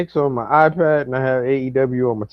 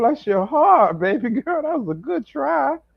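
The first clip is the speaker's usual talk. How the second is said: very high, put-on Southern falsetto voice; 13 semitones higher than usual. Teasing another speaker about a prediction: Big Mama-style Southern voice. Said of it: "are you trying to do Marlon Wayne as Big Mama".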